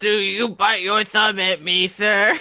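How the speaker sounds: put-on drunken slurred voice. Voicing a character who challenges someone in a tavern: drunken voice. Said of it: "Cara very drunkenly is like".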